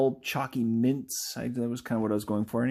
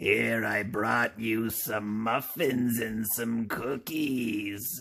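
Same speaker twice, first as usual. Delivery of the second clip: every word stretched out slowly. Introducing Ampersand Island's favorite aunt and trying out her voice: Aunt Dismay voice. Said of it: "I think that should be her voice".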